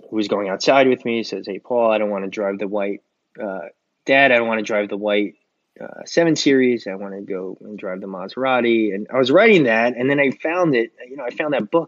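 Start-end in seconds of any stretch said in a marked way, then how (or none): none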